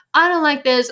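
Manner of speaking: loud, high-pitched, flustered outburst. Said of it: "And you're like".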